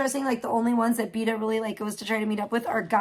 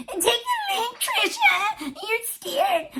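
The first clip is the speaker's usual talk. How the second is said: very high, nasty, swooping, whiny, sneering hag voice. Retelling a taunt from Vita on a panel: mocking a whiny old hag voice. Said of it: "her nasty, whiny ass fucking old fucking hag voice".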